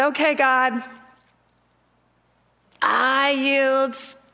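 mock clenched-teeth speech. Retelling what she said to God before bed, through clenched teeth. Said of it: "I'm like saying it with clenched teeth".

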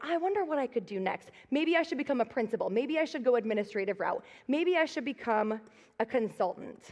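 ordinary talk

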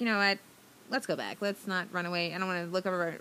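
ordinary talk

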